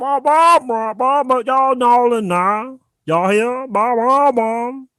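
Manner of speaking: put-on high wah-wah mumbling babble, Louisiana accent. Teasing the other host that he sounds like a cartoon parent, Peanuts parent voice. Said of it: "like the Louisiana accent".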